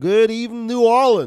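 Southern US accent. Doctor greeting New Orleans on his channel, in a put-on Deep South accent. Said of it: "This is my deep south accent".

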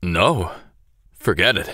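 wavering, trembling, shaky, unsteady voice. At a card game, a man answers the girl's question, shaky reply. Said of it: "He shakily responded".

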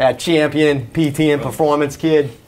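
put-on Boston accent. Podcast host introducing the show, in a put-on boston accent. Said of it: "I can turn on the accent if I want to".

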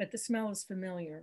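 ordinary delivery, nothing marked

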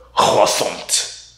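guttural, hacking sound from back of throat. Showing another speaker how to say a french word: hacking from the back of the throat. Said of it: "hack up the, the mucus in the back of your throat".

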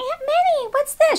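very high, tiny, cute little mousy voice. Imitating her asking about things in the handbag, in a cute little mousy voice. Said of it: "She has like this cute little mousy voice".

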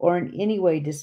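ordinary delivery, nothing marked

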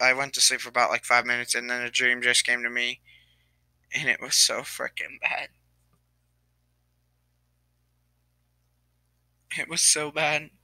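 tearful, crying through the words. Talking to viewers after waking from a short nap, crying. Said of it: "I'm really sorry for crying".

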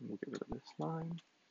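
softest most soothing voice. Coding and talking viewers through changes: Bob Ross soft soothing voice. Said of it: "my softest, most soothing voice".

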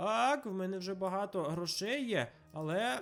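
ordinary talk

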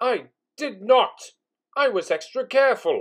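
high, very loud, outraged indignant exclamation. Accused of blowing ashes on a top hat, he protests, indignant exclamation. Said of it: "He exclaimed indignantly".

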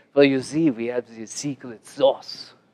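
put-on heavy Israeli accent, laid on thick. Quoting Israel, a vice president of development, in his thick Israeli accent. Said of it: "and his very thick Israeli accent".

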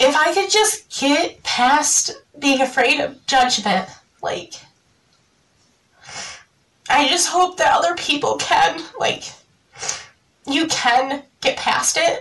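tearful, crying voice pushing the words out. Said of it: "I'm crying".

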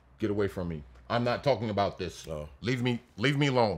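mock dismissive, brushing-off referee voice, put on. Describing how referees react to a player going at them: mock-dismissive referee impression. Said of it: "I love that ref impression".

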